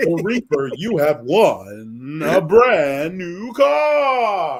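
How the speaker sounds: big, loud, swooping game show host announcement. Announcing to Reaper what he has won, in The Price is Right voice. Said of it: "do the Price is Right voice".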